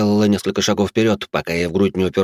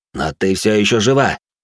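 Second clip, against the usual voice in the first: usual speaking voice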